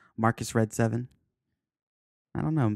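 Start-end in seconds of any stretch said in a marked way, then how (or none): 0.2-1.1 words blurred and run together smoothly as one. Saying a name quickly to show how it sounds: name said fast. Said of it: "if you say it fast".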